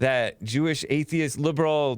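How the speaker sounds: ordinary delivery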